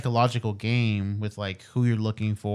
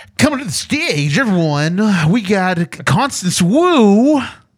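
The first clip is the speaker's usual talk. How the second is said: showy hype announcer voice, very high and loud; 11 semitones higher, 11 dB louder than usual. Asked to show off an announcer voice, calling someone to the stage. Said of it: "announcer voice".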